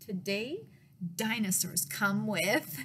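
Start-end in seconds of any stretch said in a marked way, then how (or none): none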